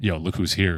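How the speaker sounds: put-on whisper. Retelling going up to each newcomer: imitating a whisper. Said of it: "I just went up to them and whispered".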